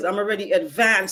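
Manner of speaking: heavy stress placed on "advanced".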